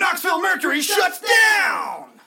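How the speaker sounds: very high, very loud, booming, drawn-out theatrical delivery. Reading the next discussion topic aloud: dramatic reading voice. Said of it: "Can I read it in a dramatic voice?".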